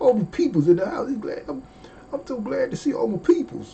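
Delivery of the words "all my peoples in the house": quick, high, slightly twangy. Speaker greeting everyone present: with a little twang. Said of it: "I gotta put a little twist, twang to it".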